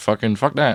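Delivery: ordinary talk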